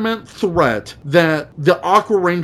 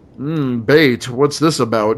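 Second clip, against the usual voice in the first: low, menacing, threatening tone; 4 semitones lower than usual. Retelling a scene, quoting a character's reply: mock-menacing quote. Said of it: "all menacingly".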